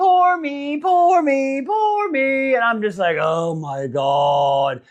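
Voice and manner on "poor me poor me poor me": very slow, drawn-out, high whining. Mocking a daughter crying on her mother's lap, mock whining. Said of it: "sitting here just whining".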